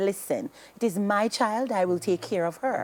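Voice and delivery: ordinary talk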